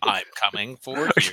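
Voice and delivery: put-on possessed electronic talking-toy voice. Joking that a Speak & Spell has become possessed: possessed Speak & Spell voice. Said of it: "your speak and spell that has also become possessed".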